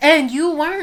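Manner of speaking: loud, shady little jab in tone. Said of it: "Dang, I don't know if that was shady".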